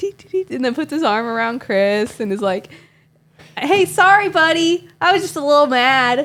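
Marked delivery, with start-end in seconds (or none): 3.6-6.3 put-on chummy, upbeat, cheerful, raised, high voice. Retelling the driver apologizing the next day: imitating a cheerful apology.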